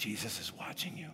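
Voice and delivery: gentle soft-spoken voice. Telling a story, the speaker voices what a burglar heard in a house, soft voice. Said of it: "a soft voice said".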